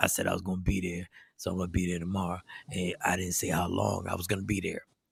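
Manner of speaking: very low, very deep, very soft hushed voice. Reading out a text from a man they argue with, in an imagined voice. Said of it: "I'm doing the voice on what I feel that the text, the voice would would be for the text".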